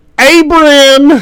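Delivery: very loud, very high, drawn-out holler. Voicing a character calling out across a ship: yelling a name. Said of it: "you hear Glitter yelling".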